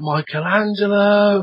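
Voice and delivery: put-on high, slow, drawn-out child voice calling out. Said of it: "I just started yelling out".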